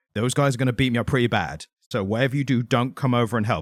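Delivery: normal talking voice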